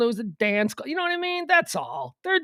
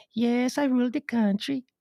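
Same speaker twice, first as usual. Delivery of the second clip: fake Scandinavian accent. Imitating a foreign leader in photos: put-on Nordic accent. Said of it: "I'm pretty sure this is it".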